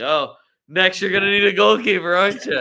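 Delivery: loud remark spoken through laughter. Imitating David De Gea laughing at the club's transfer plans: imitating De Gea laughing. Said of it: "sitting over there laughing like".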